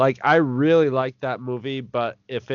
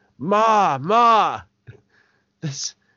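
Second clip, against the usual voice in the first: put-on Boston accent, pitched high; 7 semitones higher than usual. Describing a guy in a movie sequel calling to his buddy: boston accent. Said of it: "with the same Boston accent going".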